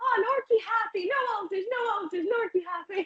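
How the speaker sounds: very high put-on Greek accent, broken English. Retelling what the vet, who is Greek, said about Norky, imitating Greek-accented English. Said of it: "he is Greek, so his English wouldn't".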